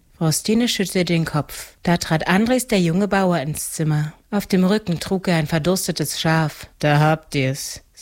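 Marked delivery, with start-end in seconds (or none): 6.8-7.8 toneless, flat, lower and slower. A young farmer brings a dead sheep into the room and speaks, toneless. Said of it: "sagte er tonlos".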